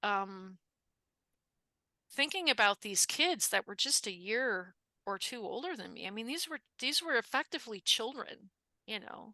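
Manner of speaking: getting choked up mid-sentence, voice catching. Remembering students who died of measles: getting choked up. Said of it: "I'm getting a little choked up".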